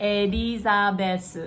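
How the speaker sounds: elizabeth broken into Japanese syllables, Japanese pronunciation. Explaining how the name sounds in Japanese: Japanese pronunciation of 'Elizabeth'. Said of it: "if they were to say the whole thing in Japanese, it sounds like this".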